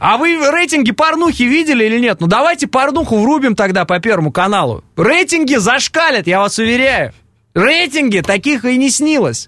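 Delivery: mocking, dry, biting sarcastic tone. Speaker arguing about tv ratings, sarcastic. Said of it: "что это сарказм".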